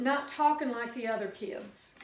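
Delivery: ordinary talk, nothing marked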